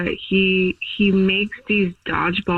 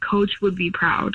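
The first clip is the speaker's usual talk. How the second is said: soft, hushed stage whisper under the breath. Retelling what a partner half-whispered during intimacy: imitating Jeff half-whispering. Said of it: "he rolled away and he whispered".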